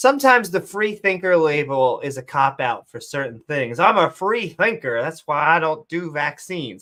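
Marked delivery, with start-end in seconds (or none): 3.8-6.8 put-on southern American accent. Voicing a self-described free thinker while talking about skeptics: southern accent. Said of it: "I don't know why I had to give that a southern accent".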